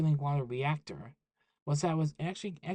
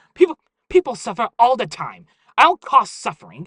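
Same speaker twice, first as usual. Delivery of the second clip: very loud, shrill, snapping, swooping yell; 7 semitones higher, 15 dB louder than usual. Reading a story aloud, the narrator voices a character snapping back at another, yelling. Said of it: "Uh, President [name], / her true savage nature flashing through his sophisticated image. / She yelled. / I'm only doing this for the money".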